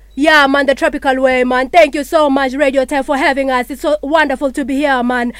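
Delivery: put-on Jamaican accent all the way through. Demonstrating a series of accents, now moving on to a Jamaican accent. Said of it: "move on to the Jamaican accent".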